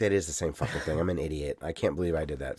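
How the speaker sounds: embarrassed self-scolding mutter. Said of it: "I'm like".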